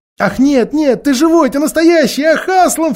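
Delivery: very high, loud, ringing outcry. Narrator reads Lucy answering Aslan, who just licked Susan's forehead: crying out. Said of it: "вскричала Люси".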